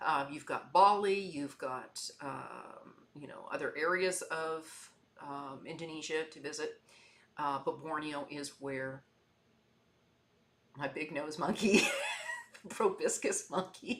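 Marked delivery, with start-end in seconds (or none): 7.6-14.0 swooping pitch, giggling and laughing through words. Describing Borneo's wildlife and correcting a word, laughing while talking. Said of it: "I really can't stop laughing about that".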